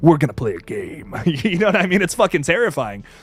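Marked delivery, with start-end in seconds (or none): 0.0-1.1 very low, deep, scary, threatening horror voice. Showing why his voice in Saw is so much scarier, in a low, scary Tobin Bell voice. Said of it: "It's so low and it's like".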